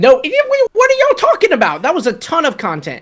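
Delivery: indignant, disbelieving tone.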